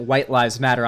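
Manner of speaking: ordinary talk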